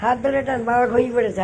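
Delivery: high, loud, coaxing call.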